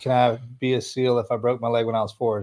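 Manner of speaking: ordinary talk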